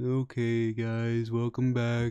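soft, dim-witted, dopey goofball voice. A speaker suggests talking like dopeys, then greets the guys in a dopey voice. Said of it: "talk like a bunch of dopeies".

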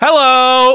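shrill, very high scream. During a sound test before talking to listeners: screaming. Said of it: "we should probably scream things".

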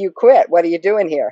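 ordinary talk

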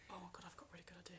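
excited, fast, breathless whisper.

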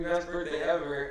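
normal talking voice

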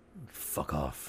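hushed, barely audible whispered mutter under the breath. Narrating a character who gets closer to the listener, muttered under his breath. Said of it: "under his breath he says".

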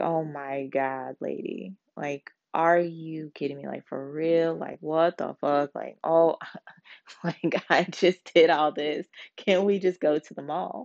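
annoyed, incredulous, fed-up, exasperated outburst. Retelling her reaction to being asked about chores: imitating someone exasperated. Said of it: "you can see the look in her face".

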